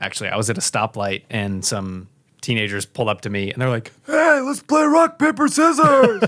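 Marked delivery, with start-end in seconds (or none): 4.1-6.2 put-on raspy, very high-pitched teenage voice, loud call. Retelling teenagers at a stoplight asking to play: imitating a raspy-voiced teenager. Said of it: "pretty raspy voice for a teenager".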